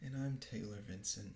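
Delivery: very quiet, sad, downcast voice. Co-host introducing themselves at the show's opening: quiet and sad. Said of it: "you're so quiet and you sound so sad".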